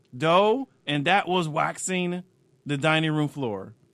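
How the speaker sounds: loud, put-on growling voice.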